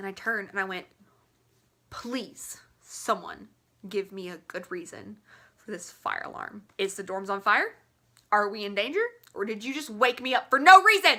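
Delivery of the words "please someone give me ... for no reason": mock fed-up, very upset, demanding tone. Retelling demanding a reason for the fire alarm: imitating her upset self. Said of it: "Very upset".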